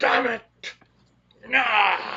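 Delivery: shrill, very high, very loud angry yell. Speaking as a character who yells in Dwarvish; in-character yell. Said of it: "in Dwarvish I yell".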